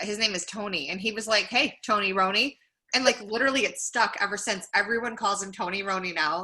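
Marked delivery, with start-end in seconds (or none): none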